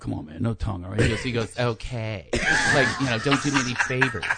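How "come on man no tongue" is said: soft, hushed whisper under the breath. Recounting going over to the guy they made out with, retelling a whisper. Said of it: "I went over and I whispered to him".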